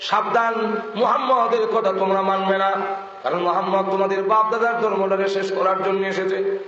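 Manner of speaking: plain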